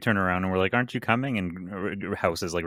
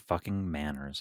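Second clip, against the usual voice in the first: grumbling under breath, lower and quieter; 4 semitones lower, 6 dB quieter than usual. Voicing a gnome mopping up a spill: muttering under his breath. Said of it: "he's muttering under his breath".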